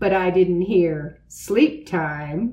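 ordinary delivery, nothing marked

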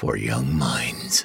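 very low whisper.

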